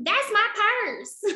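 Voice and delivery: put-on very high-pitched girl's voice with country accent. Retelling a girl from an old episode, in a country accent. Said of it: "the girl just sounded so country".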